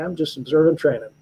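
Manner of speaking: distinctive, imitated Southern gentleman's accent. Retell his answer when asked what he is doing here, in a distinctive southern gentleman accent. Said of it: "a very distinctive Southern gentleman accent".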